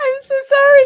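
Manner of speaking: high, loud, laughing, giggling delivery.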